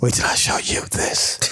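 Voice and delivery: slow, drawn-out little whispered hush. Talking up a football team quietly, keeping it low-key: little whisper. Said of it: "we gonna whisper".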